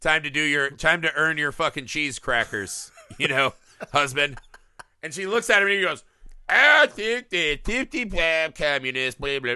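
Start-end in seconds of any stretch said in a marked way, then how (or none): 6.5-9.6 put-on drunk voice, much slower. Retelling how a senator husband answers his wife, the speaker is acting drunk. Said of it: "like he's all drunk and shit".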